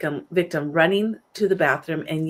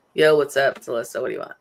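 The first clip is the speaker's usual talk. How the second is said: mock rude casual tone, lower; 4 semitones lower than usual. Contrasting with how not to answer the phone: imitating a rude casual phone greeting. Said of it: "not like".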